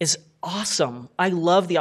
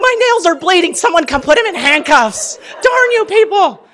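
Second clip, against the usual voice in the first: very high, loud, put-on furious ranting; 12 semitones higher, 11 dB louder than usual. Recounting to an audience how a man made her break her nails, retelling her angry outburst. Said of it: "I was so mad".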